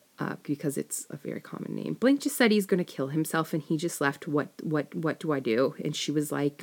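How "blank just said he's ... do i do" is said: ordinary delivery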